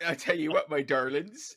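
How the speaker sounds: broad, very loud, full-on put-on West Country accent. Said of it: "full-on West Country accent".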